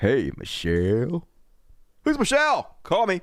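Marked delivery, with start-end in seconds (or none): 0.0-1.3 deep, very low, seductive sexy voice. Streamer reading super chats, asked by a viewer to say hey Michelle: sexy voice. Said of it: "just say, hey, Michelle, in your sexy voice".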